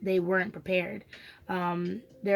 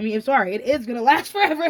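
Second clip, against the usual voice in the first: very loud, high voice, laughing through the words; 5 semitones higher, 8 dB louder than usual. Talking about a soul family, the speaker laughs at them. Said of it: "I'm laughing at them".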